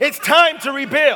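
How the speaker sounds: cheeky, indignant attitude. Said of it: "Say it with an attitude".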